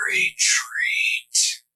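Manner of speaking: very high, rasping almost-whisper. Voicing a helmeted foe calling retreat: rasping low voice. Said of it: "this rasping, low voice".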